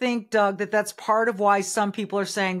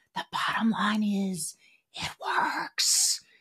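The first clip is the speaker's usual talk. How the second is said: hushed, slow, breathy put-on whisper; 5 dB quieter than usual. Talking about negative campaigning, in a Joe Biden voice. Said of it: "let me do it in the Joe Biden voice".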